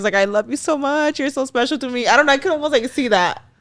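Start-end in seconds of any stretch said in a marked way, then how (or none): 0.1-2.1 acted, near tears, teary and weepy voice. Imitating a friend calling while drunk, in tears: imitating someone in tears. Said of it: "in tears".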